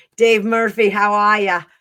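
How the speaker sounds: loud, terrible put-on Australian accent. Greeting a listener who sent a question in a bad australian accent. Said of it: "That's worst Australian accent ever".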